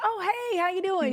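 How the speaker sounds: high, surprised, friendly voice.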